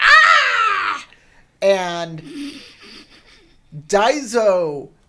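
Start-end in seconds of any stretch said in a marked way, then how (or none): 0.0-1.1 very high, very loud, drawn-out monster shriek. Voicing a creature that throws its head back and screams: screaming creature. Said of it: "Your voice when you scream is hilarious".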